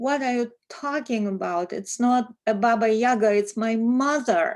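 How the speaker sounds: mock, very indignant, loud yelling outburst. Retelling how an artist yelled at the minister: imitating an indignant yell. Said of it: "in a very indignant voice".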